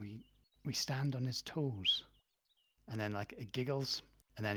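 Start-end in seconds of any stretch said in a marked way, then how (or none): 0.0-2.0 small, slow, tiny creature voice. Narrating a scene where an unseen voice speaks from the leaves, in a little voice. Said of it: "you hear like a little voice".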